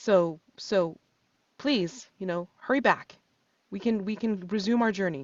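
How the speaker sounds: startled, surprised, half-shocked delivery. Narrating a scene and voicing a communique heard dimly, surprised and semi-shocked. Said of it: "in a surprised and and and um semi-shocked voice".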